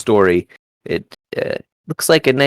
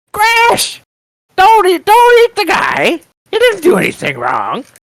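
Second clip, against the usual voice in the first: put-on old woman's voice calling out, much higher, louder; 5 dB louder than usual. Story narrator voices a distant figure shouting at a crocodile: old woman's voice crying out. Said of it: "It's an old woman's voice".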